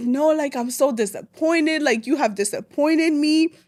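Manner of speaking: put-on crying voice. Retelling how mom reacted to the pregnancy news: imitating mom crying. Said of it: "And she's just crying".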